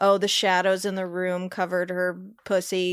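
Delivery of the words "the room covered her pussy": ordinary talk, nothing marked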